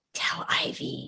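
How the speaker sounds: soft, breathy whisper, as quiet as possible. Retelling a story, voicing what they whispered to an aunt, retelling a whisper. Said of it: "and I whisper".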